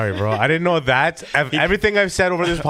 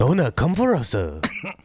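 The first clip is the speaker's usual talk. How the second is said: put-on, fake Japanese accent; 3 semitones lower than usual. Asked by a friend to say it in Chinese, answering in a mock Japanese-sounding accent.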